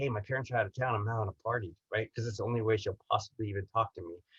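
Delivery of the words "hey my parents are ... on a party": low, confiding, hushed, half-whispered stage whisper. Retelling inviting the pretty girl in English class to a party: retelling a half-whisper. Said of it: "I whispered to the pretty girl".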